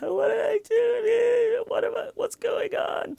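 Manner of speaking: very high, loud, overdone fake sobbing. Retelling a woman's lie cry, imitating fake crying. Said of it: "like fake crying".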